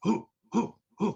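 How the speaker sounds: high, loud hooting howl, like a creature call.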